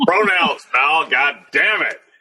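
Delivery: put-on wrestling promoter announcer voice. On a wrestling radio show, a host does a Vince McMahon impression. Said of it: "your Vince McMahon impression".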